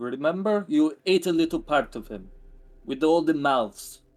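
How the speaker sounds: put-on Russian accent. Speaking in character, kneeling to face another character: Russian accent. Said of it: "Why am I going into a more Russian accent?".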